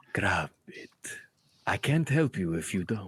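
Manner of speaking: mysterious low whisper. Voicing a voice in a player's mind urging them to grab the crystal: whispering voice in the mind. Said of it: "the voice continues to whisper".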